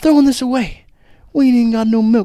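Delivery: put-on grief-stricken voice. Retelling a film scene about running out of milk: imitating grief-stricken sadness. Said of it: "he says it as if, like, someone's just passed away".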